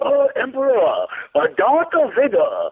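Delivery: put-on slow, swooping sci-fi alien villain voice. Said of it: "You do that really well".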